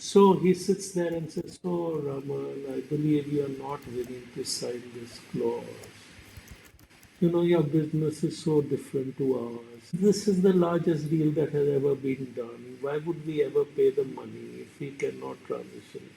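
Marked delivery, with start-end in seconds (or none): 1.6-16.1 flat, even monotone, dead level throughout. Retelling a lunch meeting where Premji pressed him on a clause: imitating Premji's monotone. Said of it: "He talks in monotones".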